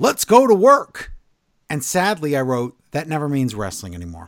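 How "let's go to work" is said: loud, high, drawn-out yell. Recapping a wrestling show, retelling John Cena's entrance line by imitating his yell. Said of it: "But John Cena comes out and he yells".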